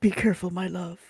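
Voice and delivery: whispering. In a role-play scene, a character speaks to his love, whispered. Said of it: "And he whispers".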